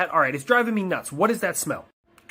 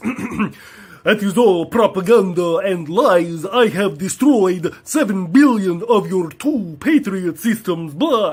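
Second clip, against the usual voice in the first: loud, very slow, drawn-out vampire drawl; 2 semitones higher, 7 dB louder than usual. Speaker voicing an opponent's reply in a Dracula voice. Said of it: "I made him sound like Dracula".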